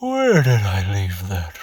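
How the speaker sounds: speaking while yawning. Demonstrating how someone sounds, speaking while yawning. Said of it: "like you're yawning".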